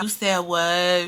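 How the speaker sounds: low, slow, deep mellow drawl. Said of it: "this how she talk, y'all".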